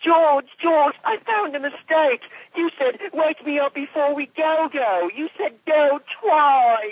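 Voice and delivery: very high, annoying put-on whiny British voice. Recounting a voice-acting line they once recorded, in an annoying, whiny British voice. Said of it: "a really annoying, whiny British voice".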